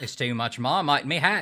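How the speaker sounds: put-on Australian accent. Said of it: "I'm not gonna do it".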